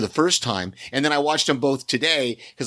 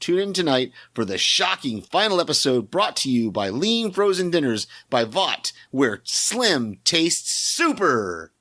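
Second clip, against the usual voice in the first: full promo-spot announcer voice delivery. Reading a promo for a show's final episode, in best announcer voice. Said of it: "I wanted to do that in my best announcer voice".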